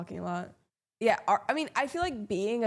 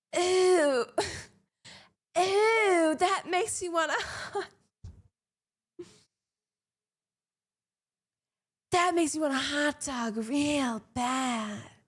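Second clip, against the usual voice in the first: movie-star impression, much higher; 7 semitones higher than usual. Trying out a voice that you will keep working on, do a Jennifer Coolidge impression. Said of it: "you're going to think I'm Jennifer Coolidge".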